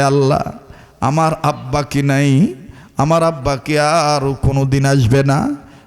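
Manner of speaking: plain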